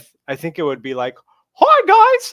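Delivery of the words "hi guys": squeaked out high and loud. Asked for a best Mickey Mouse impression: Mickey Mouse impression. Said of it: "In your best Mickey Mouse impression".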